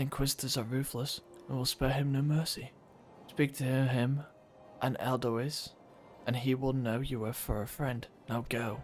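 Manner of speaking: soft, hushed voice. Reading a whispering game character's lines aloud: softer voice. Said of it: "I had to say in a softer voice 'cause you were whispering".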